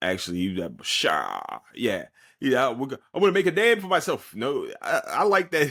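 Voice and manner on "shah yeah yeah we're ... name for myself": put-on New Orleans accent with swooping pitch. Retelling how a hard-to-understand man talked, imitating his New Orleans accent. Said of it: "he kind of did a really good New Orleans accent".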